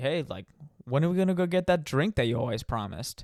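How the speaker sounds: put-on, dry, sarcastic, needling tone. Retelling what she asked about a promised drink: imitating someone speaking sarcastically. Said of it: "she said, like, sarcastically".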